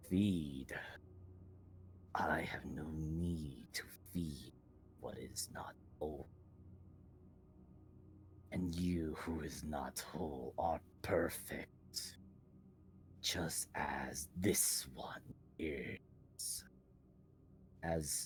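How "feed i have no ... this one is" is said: slow, whispered creature voice. Voicing a creature speaking into a player's mind: booming thunderous voice. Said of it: "a voice of thunder, a laughter comes into your head".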